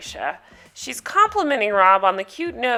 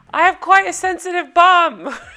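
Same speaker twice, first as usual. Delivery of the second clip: bad South African accent, loud, high, yelled; 9 semitones higher, 6 dB louder than usual. Repeat what Rob tells everybody in his interview to camera, as a bad Rob impression, South African accent. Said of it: "I cannot do a South African accent".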